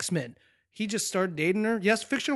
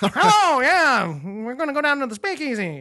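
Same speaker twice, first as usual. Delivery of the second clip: put-on twenties mobster voice, old-time gangster style; 5 semitones higher, 8 dB louder than usual. Joking about the nineteen twenties, speaker does a 1920s gangster voice. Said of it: "That's my uh, nineteen twenties gangster".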